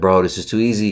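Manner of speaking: plain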